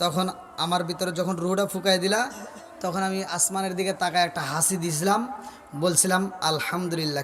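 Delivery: low, soft, humble voice.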